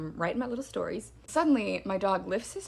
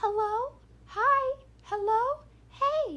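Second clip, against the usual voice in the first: creepy doll-like voice, very high, very drawn out. Recalling a voice circling the fence line, speaker does a creepy doll voice. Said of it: "creepy doll voice floating around".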